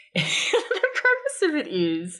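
talking through laughter. Starting to describe a ridiculous podcast, laughing while talking. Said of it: "Why are you laughing already?".

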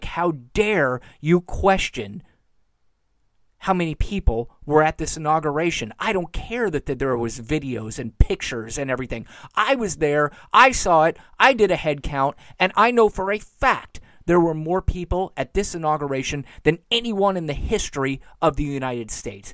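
usual speaking voice

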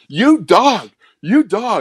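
mild, very slow, high, drawn-out taunting call. Retelling how an opponent screamed at him after a tackle: imitating someone screaming. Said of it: "he's screaming".

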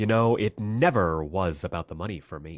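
theatrical delivery, key words punched hard. Quoting a favorite line of the character: Captain Cold impression. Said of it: "It's like this one where".

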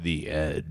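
voice dropped as deep as it goes. Trying the show sign-off again: lowest voice. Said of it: "your lowest voice and say".

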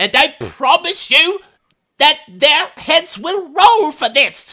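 very high, very loud, furious, booming, drawn-out yelling. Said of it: "this madman, uh, yelling".

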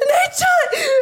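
high-pitched, excited squealing.

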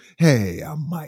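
fake sweet, soft voice. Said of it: "Look at those dulcet tones right there".

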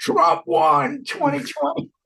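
mock raw, rough, high-pitched scream. Retelling what a man did after the judge left the room, imitating a man screaming. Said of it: "he screams".

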